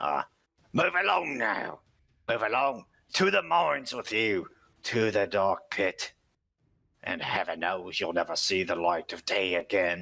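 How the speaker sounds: rough, gruff orc voice. Narrating a scene, orcs drive someone along to the mines, gruff orc voice. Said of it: "you hear gruff voices".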